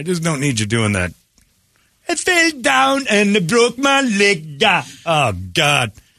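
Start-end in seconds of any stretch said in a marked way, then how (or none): 2.1-4.6 put-on Jamaican accent, very high and slow. Mocking people who put on the accent: imitating a jamaican accent. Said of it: "I like the Jamaican accent".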